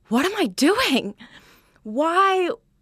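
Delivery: high, slowed, despairing cry. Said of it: "you're like".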